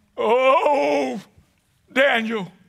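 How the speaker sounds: mournful, lamenting cry. Speaker acting out the king calling to daniel at the den: lamentable voice. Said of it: "he had a lamentable voice. I'm going to try to do that for you".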